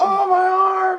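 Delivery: shrieking, very high, very loud pained scream. Speaker recounts a guy who landed on his arm, retelling a scream of pain. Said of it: "he just starts screaming".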